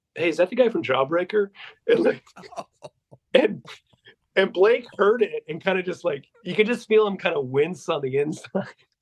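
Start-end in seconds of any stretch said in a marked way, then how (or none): 0.2-1.5 bone-dry, wisecracking delivery, acted out. In a dead-quiet room, the speaker redoes Danny calling out: imitating Danny's loud, dry remark. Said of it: "says very loudly, just in the driest way".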